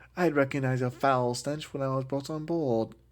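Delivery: put-on, pseudo-British accent. Discussing Leia's accent when talking to Tarkin, doing Leia's British accent. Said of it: "how I've always heard it in that British accent".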